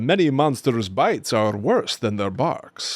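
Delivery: put-on storybook vampire voice, laid on thick. Reading a monster book aloud to a child, doing a Dracula voice. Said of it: "I try to do a bunch of voices. So I'll be like, "Dracula".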